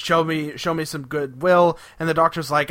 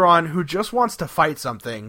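plain

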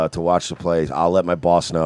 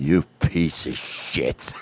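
hushed, furious near-whisper; 3 semitones lower, 5 dB quieter than usual. Describing what it's like to make Frozen really angry: imitating Frozen's angry tone. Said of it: "say in that tone".

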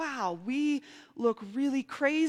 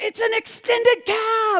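mock loud, very high, far-carrying shout; 12 semitones higher, 6 dB louder than usual. Retelling shouting to a man standing far off: retelling a shout. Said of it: "And I'm shouting at him".

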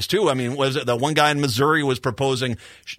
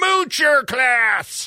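scornful, shrill shriek, pitched way up; 11 semitones higher than usual. Retelling what pro-life critics started screaming after a baby was born, mock screaming. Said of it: "they started screaming".

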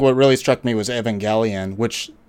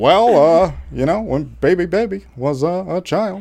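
put-on elderly politician voice, higher pitch; 8 semitones higher than usual. Giving a presidential answer as a joke: Sleepy Joe impression. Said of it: "that's my Sleepy Joe impression".

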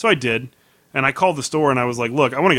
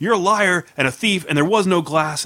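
put-on, higher-pitched mock scream; 6 semitones higher than usual. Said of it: "he's screaming at me".

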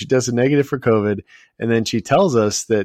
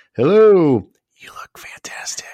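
pitched-up stage whisper; 7 semitones higher, 3 dB louder than usual. Showing a co-host another impression, doing a whispering impression. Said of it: "Here's my other impression".

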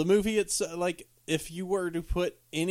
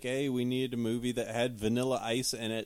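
usual speaking voice

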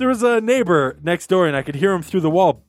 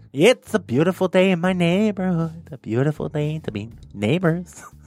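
creepy, deliberately bad, cartoonish put-on voice. Riffing on the listener's word neighbor, a host does a creepy Ned Flanders impression. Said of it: "Flanders impression I've ever heard".

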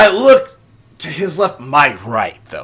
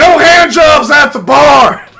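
very loud, high, shrill, drawn-out yell; 10 semitones higher, 9 dB louder than usual. Retelling a moment from bartending to the crowd: retelling own yell. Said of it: "And I yell out".

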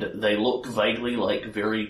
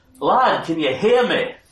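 very loud, high, booming shout; 9 semitones higher, 9 dB louder than usual. The narrator voices someone suddenly there again, calling out to the listener: big loud voice. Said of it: "he calls out to you in a big loud voice".

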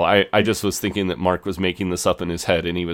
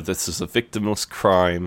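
ordinary talk, nothing marked

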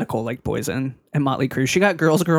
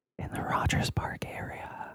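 put-on sexy woman voice, much quieter. Podcast host reading the show intro in ASMR style, sexy lady voice. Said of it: "I sound like a sexy lady".

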